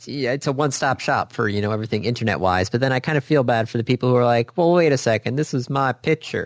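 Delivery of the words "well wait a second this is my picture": put-on Southern accent, slower. Speaker voices people objecting to their picture being used: mock Southern accent. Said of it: "Why are they Southern all of a sudden?".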